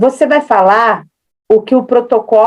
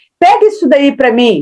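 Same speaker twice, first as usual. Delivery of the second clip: rude-sounding, raised tone of voice; 4 semitones higher than usual. Showing how tone can make a request sound rude, raised tone of voice. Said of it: "um tom mais alto".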